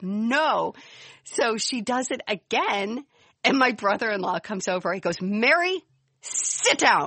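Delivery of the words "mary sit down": mock-stern, imitated stern voice, slower. Retelling her brother-in-law telling her mom to sit down, mock-stern order. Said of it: "to hear him so stern".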